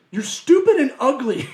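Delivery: very loud, high-pitched yell. Retelling how a motivational speaker yells at people: imitating Dan Pena yelling. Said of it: "he just yells at 'em".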